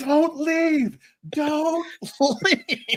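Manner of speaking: very high, slow, drawn-out calling-out yell. Retelling calling out to a guy leaving the movie: retelling own yell. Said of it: "I'm yelling at him".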